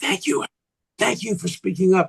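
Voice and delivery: confiding, hushed stage whisper. Retelling what faculty members say on the phone: imitating someone whispering. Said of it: "call me on the phone and whisper and say".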